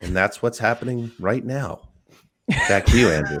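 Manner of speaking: somber, grave, sad and serious reporting tone. Imitating a reporter's coverage of a firing: imitating Ian Rapoport's sad serious voice. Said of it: "Ian Rappaport, like, sad, serious voice".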